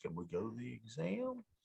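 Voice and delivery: little rising lilt at the end on exam. Speaker imitating Meg asking to do the exam, Meg's rising question. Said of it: "she puts a little question mark on it".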